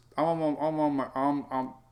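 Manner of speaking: stuttering with repeated stammering false starts. Before going to eat breakfast, the speaker starts a sentence: stuttering. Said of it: "I'm stuttering".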